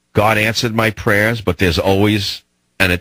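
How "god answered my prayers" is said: ordinary talk, nothing marked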